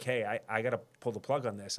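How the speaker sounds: ordinary talk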